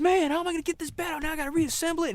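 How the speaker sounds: put-on very high, funny-sounding, rushed, mad griping rant. Retelling a kid finding his bed in the basement, mimicking Cheddar fast and mad. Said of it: "he kind of talked funny".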